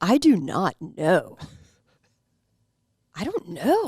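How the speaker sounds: mock-clueless, unsure put-on voice. Showing the other speakers an impression of Jake, imitating Jake being clueless. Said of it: "my impression is just him not knowing?".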